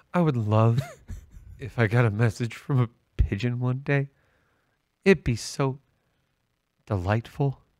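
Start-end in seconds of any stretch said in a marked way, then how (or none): 0.1-4.1 imitated softly spoken voice. Repeating the other speaker's pigeon wish back: imitating someone speaking softly. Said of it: "you said it so softly".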